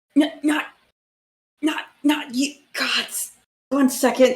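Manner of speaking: pained, strained voice. Voicing a character pressing his head in a headache: pained, as if with a headache. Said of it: "in like a headache".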